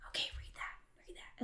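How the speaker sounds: quiet whispered voice. Retelling the dad prompting a passage from behind: imitating a whisper.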